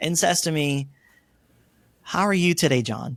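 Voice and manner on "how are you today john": gentle, kindly, mild-mannered soft voice. Retelling how a young analyst greeted a late-night request: imitating a softly spoken voice. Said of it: "very softly spoken".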